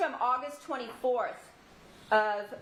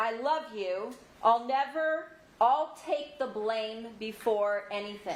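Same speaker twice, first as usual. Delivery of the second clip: plain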